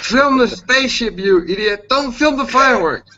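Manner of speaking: high, loud, yelled-out shouting. Retelling how his wife shouted out the window at him, imitating her shout. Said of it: "she shouts out the window".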